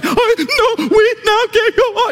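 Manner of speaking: crying too hard to speak.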